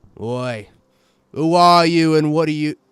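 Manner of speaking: gruff little man voice. Describing a balding man leaning out a window, in a gruff short man voice. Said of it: "the face of sort of a gruff, short man".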